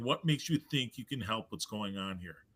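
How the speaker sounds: deep, low, eerie put-on voice. Retelling a woman suddenly nose to nose with them, in a put-on deep voice. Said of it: "in a deep voice".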